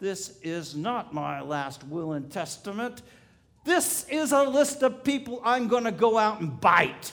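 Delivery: acted growling voice. Telling a story about a man answering his doctor, retelling a growl. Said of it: "And the man growled".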